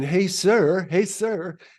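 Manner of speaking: fake British accent, high, drawn out, called out. Retelling how a woman called out to an NBA star: fake British accent. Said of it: "using this uh, Br- British accent going".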